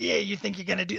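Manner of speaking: scratchy mobster voice. Describing a game's companion character, imitating his scratchy mobster voice. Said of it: "he has a real like scratchy mobster voice".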